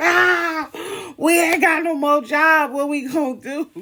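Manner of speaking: very high-pitched bawling cry and wail. Retelling how the speaker and a cousin reacted to being fired, imitating bawling. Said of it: "we are sitting here bawling".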